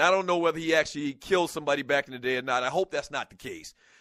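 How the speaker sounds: plain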